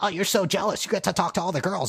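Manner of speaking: very high-pitched anime character voice. Acting out what a character says to Steven: anime classmate impression. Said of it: "that's my impression of the anime classmate".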